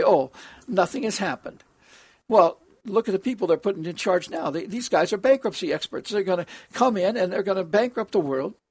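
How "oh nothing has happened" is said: ordinary delivery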